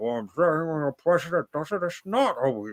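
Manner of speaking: put-on villain voice. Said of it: "Just the voice was a little Banish".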